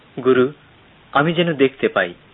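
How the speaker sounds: ordinary delivery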